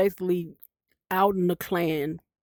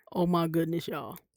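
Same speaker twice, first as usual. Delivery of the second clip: normal talking voice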